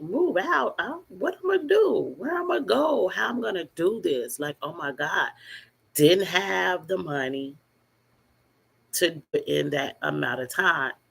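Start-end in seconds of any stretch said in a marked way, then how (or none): 0.0-4.4 high, swooping, crying voice, words spilling out. Retelling being told to move out, imitating own past crying. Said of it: "I was crying, like".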